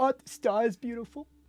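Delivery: high voice, fighting back tears. Voicing a father who turns away so no one sees him cry: character holding back tears. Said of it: "trying to make it so that you don't see him cry".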